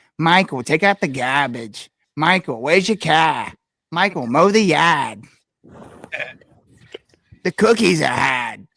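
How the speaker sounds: loud put-on Boston accent, old woman voice. Recalling his grandmother calling him as he grew up: imitating her Boston accent. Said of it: "she never lost that accent ever".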